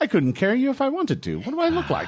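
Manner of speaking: sing-song, very high, swooping talking crow voice. Voicing a crow who answers a player asking for a ride: voicing a crow. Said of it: "the crow looks at you and goes".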